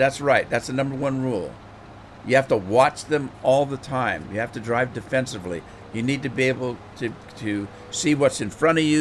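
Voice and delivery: normal talking voice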